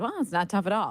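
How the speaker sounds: plainly sarcastic, dismissive tone. Retelling a reply to a reporter's question: imitating a sarcastic reply. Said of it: "he sarcastically said".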